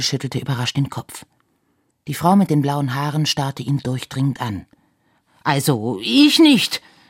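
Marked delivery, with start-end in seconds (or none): 5.4-6.8 defensive, self-protective, warding-off tone. A man answers a woman who asks who dropped a note, defensive. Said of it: "wehrte Herr Schmirgel ab".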